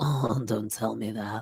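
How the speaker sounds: oddly sexy, flirty, low and hushed voice. Retelling how a man talked to a woman on the phone, imitating a weird sexy voice. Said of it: "like, weird, sexy voice".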